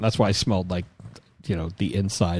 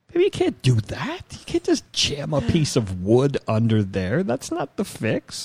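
raised, higher pitch voice; 6 semitones higher than usual. Retelling own words to a partner about a wobbling washer: high-pitched voice. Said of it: "Why did my voice get high just then?".

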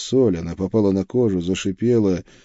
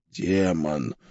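wheezing, much lower and quieter; 4 semitones lower, 7 dB quieter than usual. Trying to stand up, the narrator answers a question, wheezing. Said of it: "просипел я".

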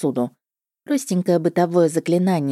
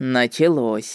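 derisive, sneering, mocking, much lower pitch; 4 semitones lower than usual. He answers the narrator's nervous order to sit at the table, mocking. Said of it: "насмешливо бросил он".

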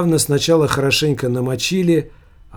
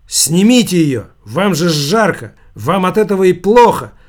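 loud, forceful, pressing exclamation; 4 semitones higher, 6 dB louder than usual. The steward, trying to pull the papakha off Savigny, exclaims. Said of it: "воскликнул стюард".

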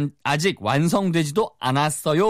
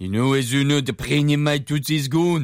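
heavy, strong French accent. Showing how a fully French-style speaker would say it: heavy French accent. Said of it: "완전 프렌치 스타일이면은".

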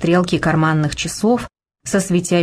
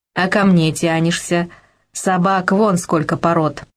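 usual speaking voice

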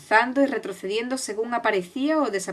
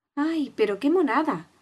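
tender, sighing delivery with a pitched-up tone; 5 semitones higher than usual. Alicia sees a huge puppy looking down at her, sighed tenderly. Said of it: "suspiró Alicia con ternura".

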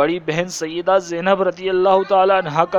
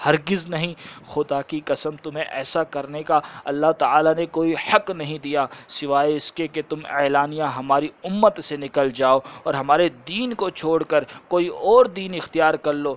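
plain

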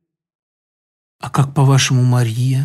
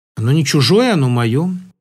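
ordinary delivery

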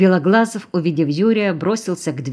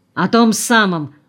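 flaring up hotly, sounding stung and thrown; 3 semitones higher than usual. Narrator reading a man's retort when questioned by another man, flaring up. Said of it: "вспыхнул Колосов".

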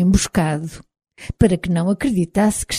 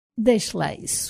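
dry, dismissive, almost whispered; 2 semitones higher, 7 dB quieter than usual. Narrator reads her own reply to a man thanking her, dry. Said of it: "disse eu secamente".

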